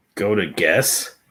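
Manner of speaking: condescending, patronizing tone. Telling another speaker where to go to find the list: condescending tone. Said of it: "say it so condescending like that".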